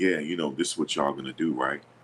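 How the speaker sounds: low, soft, deep voice. Imitating how a man talks to y'all about reps, in a low deep voice. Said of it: "He talk in a low voice. He's like".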